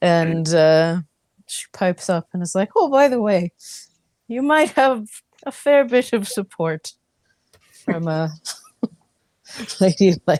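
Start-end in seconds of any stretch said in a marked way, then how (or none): 2.8-10.4 put-on English-accented character voice. Voicing a character who mentions support from lady elaine: english accent. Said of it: "You're using your English voice and not your Avalon voice?".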